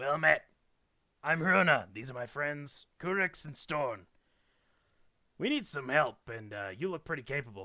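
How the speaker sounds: hoarse, muffled, loud voice. A storyteller voices a gloved stranger greeting the group, Hruna's raspy muffled voice. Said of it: "says through a thick wool scarf and raspy voice".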